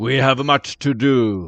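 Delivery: loud yelling voice. The narrator voices someone yelling in a nearby hall: loud yelling voice. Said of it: "someone with a loud voice yelling".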